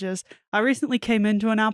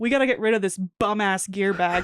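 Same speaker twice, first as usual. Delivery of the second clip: ordinary delivery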